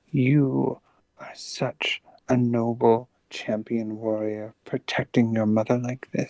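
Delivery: quiet, breathy, hushed dragon voice. Voicing a dragon who speaks only to one character, in a quiet, breathy dragon voice. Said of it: "in like quiet, quiet, quiet, breathy, draconic".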